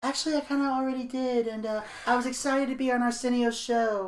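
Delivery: soft, hushed put-on voice. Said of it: "I'm just doing a voice".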